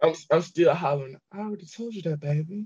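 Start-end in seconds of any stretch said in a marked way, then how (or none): 1.3-2.7 gentle, sweet motherly voice, slightly high-pitched. Quoting Susan's line to the others: imitating Susan, motherly and sweet. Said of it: "She said it like, like a mother".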